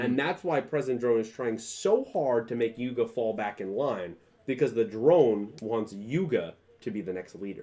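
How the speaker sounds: plain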